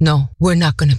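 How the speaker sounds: acted, dead-serious tone. Retelling how the speaker answered a man who shushed them, really serious. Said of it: "Da war ich richtig ernst".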